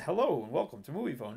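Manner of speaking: usual speaking voice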